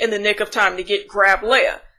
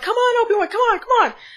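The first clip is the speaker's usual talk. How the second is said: put-on screaming, higher pitch; 13 semitones higher than usual. Retelling a tense scene where a character waits at a door: imitating Tala screaming. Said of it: "Tala's screaming".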